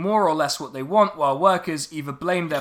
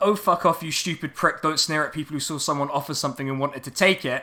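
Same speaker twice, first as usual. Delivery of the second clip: ordinary talk, nothing marked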